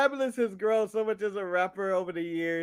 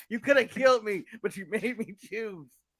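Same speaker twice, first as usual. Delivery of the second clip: mock voice in pure distress. Acting out the other speaker's answer at gunpoint: imitating someone in pure distress. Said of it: "but pure distress".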